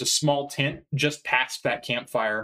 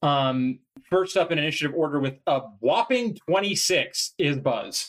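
normal talking voice

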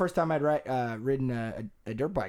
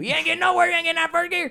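very high, loud yell carrying far; 7 dB louder than usual. Retelling advice yelled across a field: imitating Papa Subi yelling. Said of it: "He was yelling at it, at me across the field".

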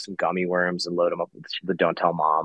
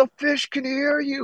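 very high, shrill, frantic scream. Retelling how a dad screamed at his loud 9-year-old kid, imitating a screaming dad. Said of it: "He's screaming".

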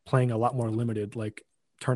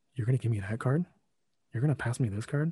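put-on condescending tone; 3 dB quieter than usual. Retelling a friend's remarks while passing packs in a draft: imitating a condescending tone. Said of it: "very condescending".

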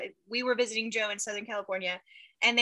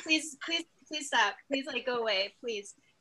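put-on uneasy, uncomfortable pleading tone, quieter; 4 dB quieter than usual. Recounting how my mom begged the little minion people following us to stop, mimicking uncomfortable pleading. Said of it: "she's like uncomfortable with them".

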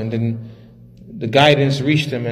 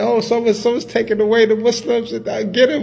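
mock yelling in woman's voice, much higher; 10 semitones higher than usual. Retelling a story, acting out a woman's yell. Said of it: "so she started yelling".

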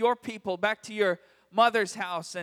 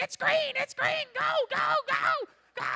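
yell, much higher in pitch and slower. Speaker retells braking at a light while Vivian shouts: retelling Vivian's yelling. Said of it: "Vivian is just yelling".

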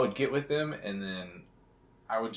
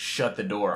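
mock yelling, shouted; 5 dB louder than usual. Speaker recalls their mom yelling at the kids every day, retelling mom's yell. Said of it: "my mom was yelling".

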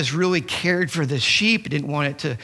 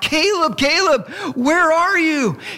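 frantic, very high, drawn-out yell; 12 semitones higher, 5 dB louder than usual. Retelling searching a crowd for a missing child: retelling yelling out a name. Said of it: "we're yelling out".

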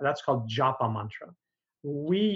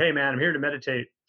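put-on, manned-up masculine bro voice. Acting out men who come to learn meditation, put-on guy voice. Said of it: "That's my guy voice".

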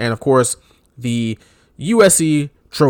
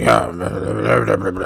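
deep, low, gravelly growl; 4 semitones lower than usual. Imitating Vince McMahon, whose voice is called gravelly: Vince McMahon impression. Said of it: "And he's like".

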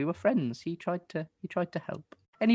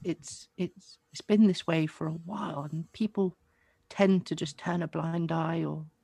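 frail female put-on voice. In a tabletop game, the narrator voices a character speaking to Revelo: frail woman voice. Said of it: "This is a frail woman".

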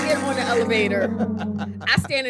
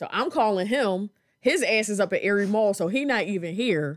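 plain

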